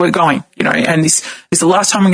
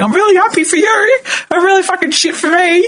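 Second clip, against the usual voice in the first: mock crying, tearful, voice pushed very high; 13 semitones higher than usual. Retelling answering people's pregnancy news: retelling own tearful words. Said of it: "I'm fucking in tears like an idiot".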